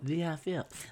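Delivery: soft, murmured voice with a lisp. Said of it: "Why y'all talking like that for?".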